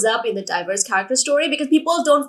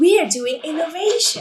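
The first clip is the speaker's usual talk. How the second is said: commercial announcer voice, pitched up; 5 semitones higher than usual. Joking that the first pages sound like an advert, in an advertisement voice. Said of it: "in that advertisement voice".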